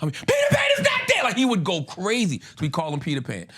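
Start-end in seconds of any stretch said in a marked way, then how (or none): 0.1-1.2 loud, furious shout. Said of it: "he would lose his shit".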